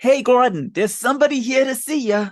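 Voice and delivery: squeaky, very high cartoon rat voice. Speaker recalls a movie line introducing a character, done in a Rizzo the Rat voice. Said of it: "In this awesome like Rizzo the Rat voice".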